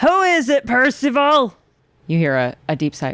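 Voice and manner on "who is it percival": very high, loud, grinding engine-like grating screech. Narrating a scene where a voice from inside calls to Percival, screeching engine-like voice. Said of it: "a voice like a badly tuned internal combustion engine screech".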